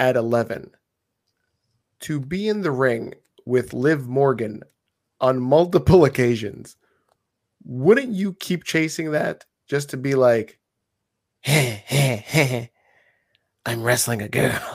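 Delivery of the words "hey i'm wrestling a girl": put-on dim, dumb cartoon teenager voice. Imagining himself at eleven in the ring with a woman wrestler: Beavis and Butthead impression. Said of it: "That's my Beavis and Butthead impression".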